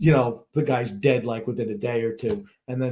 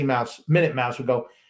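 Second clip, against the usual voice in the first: ordinary delivery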